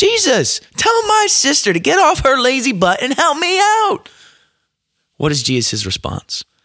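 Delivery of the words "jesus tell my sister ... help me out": mock upset, demanding, very high, shrill yell. Retelling a Bible story, acting out a woman yelling at Jesus: imitating someone yelling. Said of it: "And she's yelling at Jesus".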